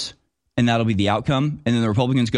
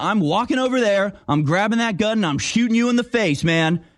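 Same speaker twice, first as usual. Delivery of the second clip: acted, shrill, very high-pitched hollering; 10 semitones higher than usual. Speaker acts out Democrats yelling across the room at Republicans, retelling a yell. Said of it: "yelling at us going".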